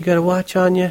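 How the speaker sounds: tiny, high, weeny whiny little voice. Narrator reading a woman's reply after he introduces himself: tiny weeny-whiny voice. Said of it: "She had a tiny little weeny-whiny voice".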